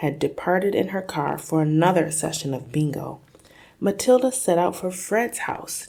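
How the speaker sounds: ordinary delivery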